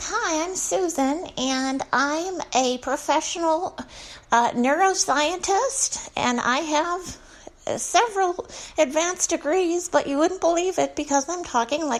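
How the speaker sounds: put-on grown woman's high, childish baby talk. Demonstrating a grown woman who talks like a baby: childish baby voice. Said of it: "talking in a baby voice. Like".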